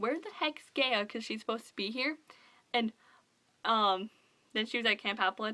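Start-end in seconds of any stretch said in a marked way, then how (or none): none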